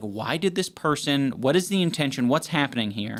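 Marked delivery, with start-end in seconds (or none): none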